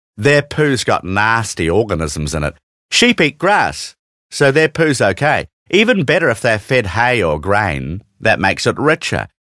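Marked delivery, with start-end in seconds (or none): none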